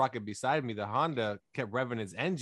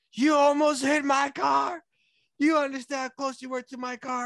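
put-on shrill, loud yelling in a woman's voice; 14 semitones higher, 7 dB louder than usual. Retelling a driver who followed him into a gas station, imitating a woman yelling. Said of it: "starts yelling at me".

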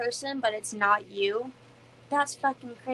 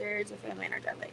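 mock offhand, casual, hushed nonchalant near-whisper; 2 semitones lower, 14 dB quieter than usual. Quoting a line from the film being discussed: imitating a nonchalant delivery. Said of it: "so, like, nonchalant".

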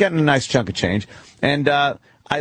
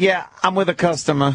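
mock sassy tone, sassy woman's voice; 3 semitones higher than usual. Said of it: "she's big and sassy".

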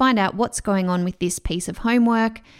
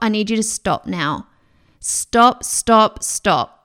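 put-on raised voice, slow, halting, each word deliberate; 4 dB louder than usual. Retelling telling a child to stop: retelling raising voice. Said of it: "So I raised my voice and told him to stop".

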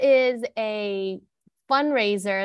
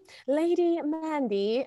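put-on British accent, pitched up; 6 semitones higher, 4 dB quieter than usual. Pretending with a friend to be ladies in Scotland: put-on British accent. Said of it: "I don't know why I have this British accent".

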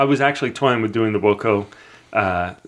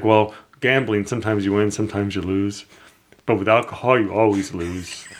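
flat, level, unvaried monotone drone. Retelling a line said by the friend in a movie: imitating a monotone voice. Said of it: "he kinda talks monotone".

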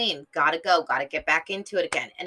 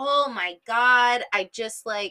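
usual speaking voice

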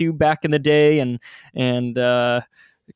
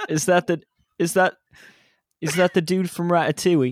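attempted Australian accent drifting into British; 4 semitones higher than usual. Repeating a question after being asked to: attempted Australian accent. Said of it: "but in an Australian accent".

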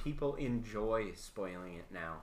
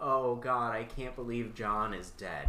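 ordinary talk, nothing marked

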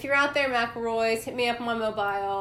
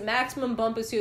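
usual speaking voice

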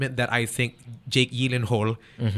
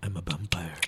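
low, soft, whispery, kind of sexy seductive voice; 6 semitones lower, 9 dB quieter than usual. Imitating an actor's vampire role: whispery sexy Robert Pattinson voice. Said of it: "the whispery, kinda sexy thing".

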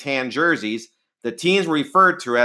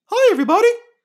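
very high, loud cartoon mouse voice; 5 dB louder than usual. Showing off cartoon impressions, a greeting done in a Mickey voice. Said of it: "I can do a good Mickey".

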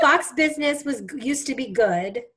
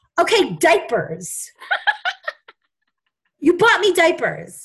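mock yelling, high-pitched and swooping; 6 semitones higher, 5 dB louder than usual. Retelling a phone call to the speaker's mother, retelling a yell. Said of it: "I'm like yelling at her".

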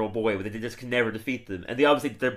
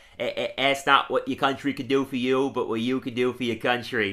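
bad, stumbling put-on mayor voice. Answering a request for a quick Mayor Quimby impression. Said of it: "Your Quimby impression, quick".

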